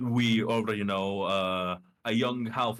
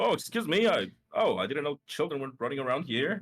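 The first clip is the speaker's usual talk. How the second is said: put-on old man voice, higher; 6 semitones higher than usual. Voicing an old half-elf man the party bumps into: old half-elf man voice. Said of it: "an old half-elf man carrying a lute".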